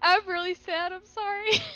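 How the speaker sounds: tearful. Player reacting to a character's death in the game, crying. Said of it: "I'm like genuinely crying right now".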